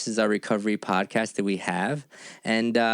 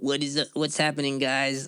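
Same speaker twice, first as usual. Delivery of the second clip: put-on cartoon groundhog critter voice; 4 semitones higher than usual. Playing a groundhog sticking its head up out of the ground, in a groundhog voice. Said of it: "I like your your groundhog voice".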